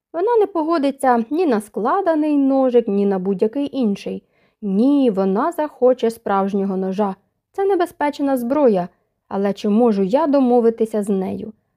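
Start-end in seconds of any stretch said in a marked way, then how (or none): none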